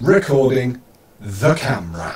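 very deliberate, clear, carefully placed words. Testing audio sync on a recording, saying the test phrase: very deliberate delivery. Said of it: "say recording the camera in a very deliberate voice".

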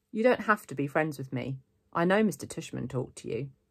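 plain reading voice

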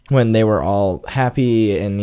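ordinary delivery

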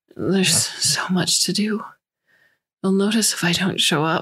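put-on slurred speech, words running together. A feverish woman lying in her bunk responds, slurred speech. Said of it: "she slurred".

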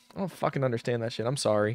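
plain

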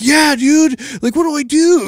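high, frantic, panicked pleading and begging.

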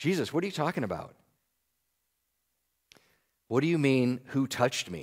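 acted, soft, frustrated, sarcastic exasperated tone. Telling of Peter frustrated with Jesus, the speaker voices Peter's mock sarcasm. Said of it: "hear the sarcasm of him".

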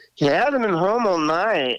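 high-pitched fake Norwegian accent, laid on. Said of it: "talked in a fake Norwegian accent like that".

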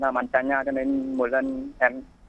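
ordinary delivery

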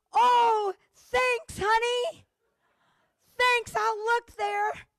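acted-out eager, hopeful voice, high pitch. Retelling how he answers her call-out, imitating his hopeful thanks. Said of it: "you can hear the hope in his voice".

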